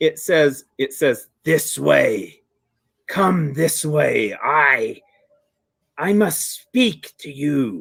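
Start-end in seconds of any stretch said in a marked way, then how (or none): 1.4-7.8 very slow, drawn-out growling voice. Voicing an unseen presence beckoning the listener to come east, growling voice. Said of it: "Kind of a growling sound behind that".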